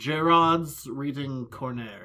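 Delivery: clumsy, bad, put-on French accent. Host introducing the next segment after the news, in a bad fake french accent. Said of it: "can't even come up with a good French accent".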